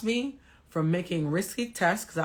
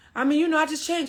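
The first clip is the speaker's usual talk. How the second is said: mock stammering, higher pitch; 8 semitones higher, 3 dB louder than usual. Retelling a man's reply to a pointed question: imitating someone stuttering. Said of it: "started stu-, stuttering".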